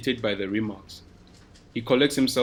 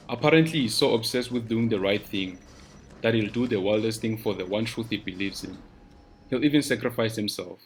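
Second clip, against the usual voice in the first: plain reading voice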